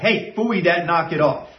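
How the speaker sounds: fairly harsh, stern scolding tone. Showing how to correct someone pulling on them, the speaker gives a fairly harsh verbal correction. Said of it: "some kind of a fairly harsh verbal".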